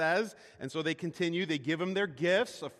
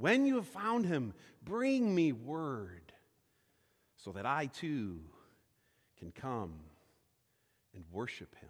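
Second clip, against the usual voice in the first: mock-pretentious, put-on pompous voice; 5 semitones lower than usual. Retelling a story's verses, quoting his instruction in a mock-pretentious voice. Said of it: "you can almost hear his pretentious voice".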